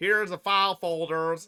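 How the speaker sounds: attempted, put-on American accent. Redoing the file-folder bit: put-on american accent. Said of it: "Let me sound more American".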